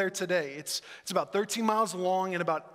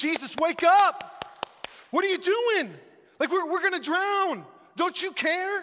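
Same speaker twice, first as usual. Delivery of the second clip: terrified, loud, high-pitched panicked yelling; 11 semitones higher, 5 dB louder than usual. Retelling the frightened disciples screaming at Jesus during the storm: retelling a panicked scream. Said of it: "They're screaming".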